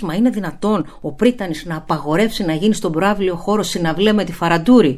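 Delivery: ordinary talk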